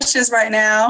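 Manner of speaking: loud, country-sounding voice.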